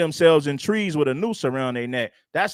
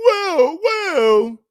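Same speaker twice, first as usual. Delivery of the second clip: put-on shock, very high, loud gasp; 12 semitones higher, 5 dB louder than usual. Mocking a man in a clip for acting offended: mock shocked gasp. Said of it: "like you're just shocked".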